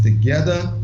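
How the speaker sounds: leaning hard on the word "together". Addressing the school's staff and students: stress on together. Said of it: "and I emphasize the word together".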